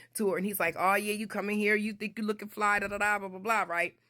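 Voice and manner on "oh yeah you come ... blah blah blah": mock needling, heckling, taunting teasing voice. Retelling how a cousin egged a girl on: imitating someone teasing. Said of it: "He's messing with her".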